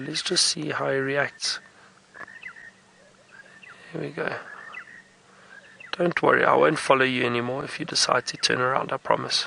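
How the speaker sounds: very calm, very low, hushed, even-toned voice. An animal is close by; speaking to him in a very calm, low voice. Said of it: "trying to keep my voice very calm, very low".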